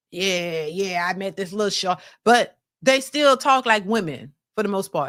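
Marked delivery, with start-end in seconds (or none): 0.1-2.0 put-on heavy talking voice, lower. Imitating how studs might talk: imitating a heavy talking voice. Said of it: "they talk heavy".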